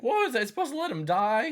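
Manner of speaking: very high, loud voice cracking mid-line. Quoting a line from a film, imitating Kevin Costner's voice cracking. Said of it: "his voice kinda cracks in the middle of it".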